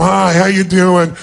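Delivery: slow, bored, can't-be-bothered, dismissive tone. Showing listeners how to greet someone like it's a total waste of time. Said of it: "like it's a total waste of your time".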